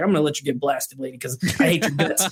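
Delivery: play-acted fed-up, hateful, spiteful, pissed-off tone. Retelling a movie character's line in a car scene: imitating a pissed-off character. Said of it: "he was pissed off".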